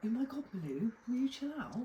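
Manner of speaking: put-on chav-style British teenager voice. Speaker decides to stay in the voice for the rest, Vicky Pollard voice. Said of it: "I'm just going to do the rest of it in this voice".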